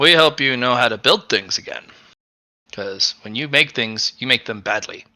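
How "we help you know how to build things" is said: ordinary delivery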